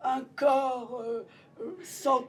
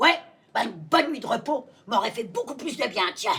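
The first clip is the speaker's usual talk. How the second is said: put-on congested, stuffy-sounding voice; 6 dB louder than usual. One actress voicing Scrooge answers the spirit, as Scrooge with a cold. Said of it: "Quand [name] s'éveilla, / il avait un bon rhume. / Une comédienne joue 14 personnages pour nous entraîner dans la folie fantastique et poétique de ce beau conte de Noel de Charles Dickens".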